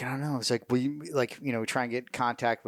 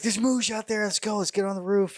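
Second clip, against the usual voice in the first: mock very high, cartoonish, alarmed shouting; 9 semitones higher than usual. Retelling a colonel running upstairs yelling about Mooj: imitating Colonel Morris yelling. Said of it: "he's yelling about Mooj".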